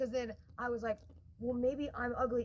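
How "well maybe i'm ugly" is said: usual speaking voice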